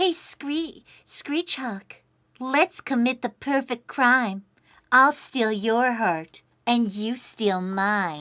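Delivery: soft, mock seductive, put-on sexy flirting voice. Streamer reading a flirt line to a chat member, in a put-on sexy voice. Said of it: "I'll use my sexy voice".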